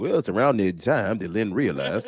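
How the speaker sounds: put-on folksy Southern narrator voice. Imagining a narrator voiceover for a coworker: Dukes of Hazzard narrator voiceover. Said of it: "needs a voiceover like the guy from Dukes of Hazzard".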